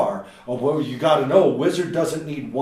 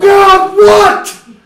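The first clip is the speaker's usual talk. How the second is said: acted angry child yell, very high, loud, shrill; 14 dB louder than usual. Imitating a kid interrupted mid-focus: imitating an angry kid. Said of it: "they get so angry when you disrupt their focus".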